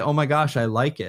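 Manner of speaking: normal talking voice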